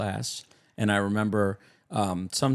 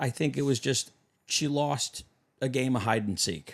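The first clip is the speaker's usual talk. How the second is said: usual speaking voice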